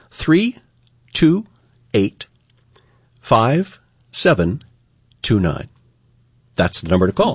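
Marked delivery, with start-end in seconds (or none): 0.1-5.7 slow, deliberate, carefully paced. Radio host repeats the call-in number so listeners can write it down, slow and deliberate. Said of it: "I'm going to say it a little slower".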